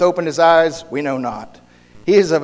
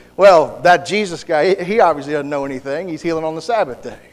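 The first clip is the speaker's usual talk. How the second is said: normal talking voice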